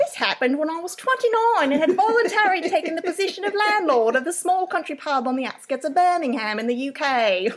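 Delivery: put-on heavy, thick Cockney accent. Asked to read the story's opening super heavy: heavy Cockney accent. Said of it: "Like Cockney?".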